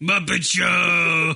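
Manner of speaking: character voice with "show" held long. Describing a DVD menu segment, imitating Animal: Animal voice. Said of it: "He's like".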